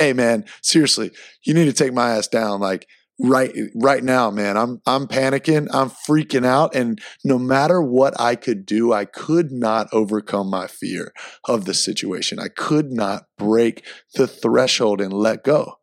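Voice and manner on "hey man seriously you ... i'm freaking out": ordinary delivery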